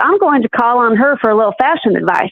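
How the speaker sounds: ordinary talk, nothing marked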